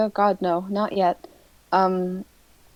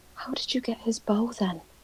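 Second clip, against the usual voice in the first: secretive, hushed whisper; 3 semitones higher, 8 dB quieter than usual. A player's character asks another how they got his bow, whispering. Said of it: "Esther's gonna whisper".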